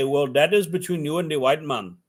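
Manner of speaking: put-on Indian accent. Imitating how a man of that kind would answer, for a listener, as a comic impression. put-on accent. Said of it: "I like doing the Indian voice".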